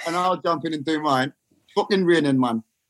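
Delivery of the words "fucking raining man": solid Newcastle Geordie accent. Taking a turn in a geordie accent-off with co-hosts; geordie accent. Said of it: "Can we have a little Geordie off?".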